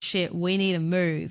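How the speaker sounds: put-on, very serious, dead-serious voice. Retelling what someone said to you that put you off so badly, imitating a really serious voice. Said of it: "in this voice that was like really freaking serious".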